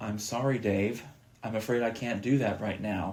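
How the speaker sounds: cold, chilly, machine-like computer voice. Describing a computer's original voice, the speaker quotes it in a cold HAL 9000 voice. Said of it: "it's very cold and like".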